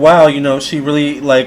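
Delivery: ordinary delivery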